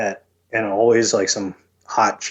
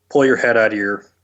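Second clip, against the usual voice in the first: plain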